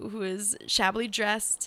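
ordinary delivery

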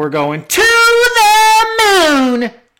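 very loud, high, slow, swooping, drawn-out hype yell. Announcing plans for Saturday afternoon: Cameron Grimes impression. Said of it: "That was actually an impression".

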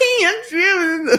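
very high, squeaky, timid, scaredy-cat voice. Retelling how a supervisor nicknamed a coworker Scaredy Boy; supervisor's mocking scaredy-boy voice. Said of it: "And did the voice. He goes".

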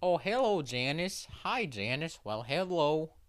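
Newfoundland accent, as spoken around Gander. Describing the story Come From Away, imitating how Gander folks talk: Canadian Gander accent. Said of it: "everyone talks like this and says".

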